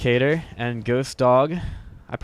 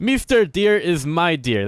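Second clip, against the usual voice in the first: clumsy, bad, high put-on Russian accent; 6 semitones higher, 4 dB louder than usual. Commentating a game, voicing the russian who scouts the deer: bad russian accent. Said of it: "a really bad accent".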